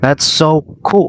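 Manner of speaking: high, genuinely thrilled, impressed excitement. Showing how tone changes a word's meaning: excited, genuine enthusiasm.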